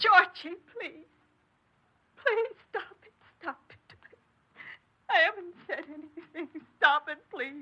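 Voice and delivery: sobbing, tearful, high-pitched crying and pleading. Pleading with her son to stop accusing her: crying while pleading. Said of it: "You don't have to cry like that".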